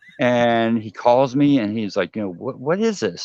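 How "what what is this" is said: put-on angry tone, quieter. Retelling a phone call about the remake, imitating an angry person. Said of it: "He is so pissed off".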